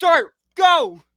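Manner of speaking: acted-out very high, thrilled, excited scream. Recapping the game, the speaker reenacts screaming at the TV at Dart.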